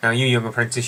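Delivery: ordinary delivery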